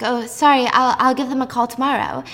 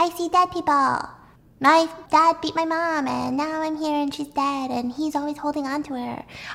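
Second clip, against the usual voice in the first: put-on eerie, creepy little girl voice; 4 semitones higher, 3 dB quieter than usual. Describing the voice expected from a new patient on a recording, creepy little girl voice. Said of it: "creepy little six year old girl's voice to be like".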